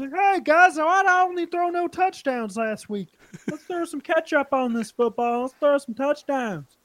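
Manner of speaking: very high, puppet-style voice. Act out the player addressing the guys, in a Mahomes Muppet voice. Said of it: "putting on his fucking Muppet voice".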